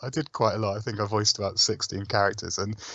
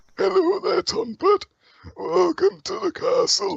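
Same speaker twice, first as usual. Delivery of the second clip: put-on very high, rough, creaky old man voice; 4 dB louder than usual. Showing a voice from the game: old man character voice. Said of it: "there's an old man in the castle".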